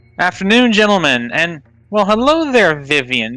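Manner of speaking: very loud, high-pitched holler, projected far. Playing a character calling a greeting from up the road, yelling as loud as possible. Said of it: "I'll just basically yell as loud as I can".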